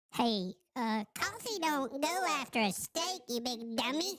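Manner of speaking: tiny, very high, slow gnome voice. Saying what the little gnome person would say: little gnome person voice. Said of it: "what would the little gnome person say".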